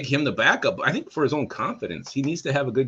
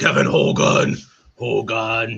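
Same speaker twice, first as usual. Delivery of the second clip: loud wrestling promo voice; 6 dB louder than usual. Telling what you will say every episode about Kevin Hogan, in your Ultimate Warrior voice. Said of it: "I will talk in my Ultimate Warrior voice".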